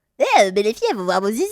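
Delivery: put-on cartoon boy voice. Doing an impression of Bart Simpson after being asked to. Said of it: "ton imitation, Alix, de Bart Simpson".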